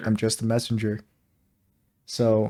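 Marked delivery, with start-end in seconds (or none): 0.0-1.0 put-on flat monotone, quieter. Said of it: "delivered exactly like, like, monotone".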